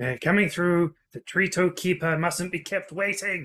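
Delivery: loud, boisterous, theatrical, high-pitched bluster. Game master voicing the kobold Alfredo coming through the door: loud, boisterous Alfredo voice. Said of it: "boisterous words of [name] come in. You know it's him because he's the only kobold who really says anything when he comes in to do his job, / You know it's him because he's the only kobold who really".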